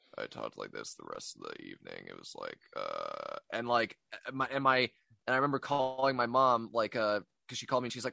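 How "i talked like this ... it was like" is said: very deep, rough, creaky blown-out bass voice. Retelling the evening after blowing out the voice: imitating own blown-out bass voice. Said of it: "my voice was just bass".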